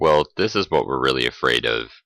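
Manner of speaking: plain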